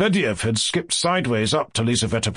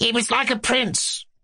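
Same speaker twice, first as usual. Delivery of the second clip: shrill, cracked character voice; 10 semitones higher than usual. Reading a novel aloud, voicing Ippolit's cry, shrill, cracked voice. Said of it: "Ippolit cried in a shrill, cracked voice".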